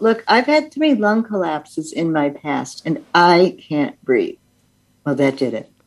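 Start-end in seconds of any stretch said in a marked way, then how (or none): none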